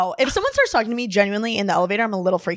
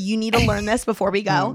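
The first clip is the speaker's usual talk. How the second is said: ordinary talk, nothing marked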